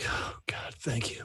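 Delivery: winded, breathy, half-whispered gasp. Player voices Zed falling to his knees after combat, out of breath. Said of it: "like out of breath".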